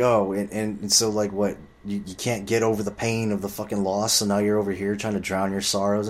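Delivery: normal talking voice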